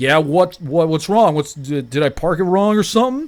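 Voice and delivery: fake extra-drunk voice. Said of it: "acting, like, extra drunk".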